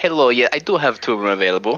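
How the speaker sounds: unusual, exotic-sounding character voice. Voicing a barkeeper who answers guests asking for rooms: exotic voice. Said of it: "what an exotic voice".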